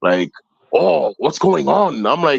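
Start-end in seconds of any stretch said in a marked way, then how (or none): 0.7-1.9 rough, hard diaphragm voice, pitched up. Retelling how William Oliver talked: imitating William Oliver's diaphragm voice. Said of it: "he would sound like he was talking with his diaphragm".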